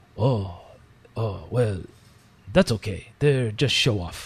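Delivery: bad put-on Japanese accent. Retelling what a japanese chef said, doing a horrible japanese accent impression. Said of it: "I try to do a horrible Japanese impression of this".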